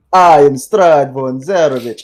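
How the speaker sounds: menacing, loud villain delivery. Player retelling how the game's villain rolls up, in a mock-menacing Strahd voice. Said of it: "all menacing and like and goes".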